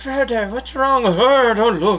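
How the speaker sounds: put-on old wizard voice. Joking around with friends, the speaker does a Gandalf impression. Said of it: "That's my Gandalf impression".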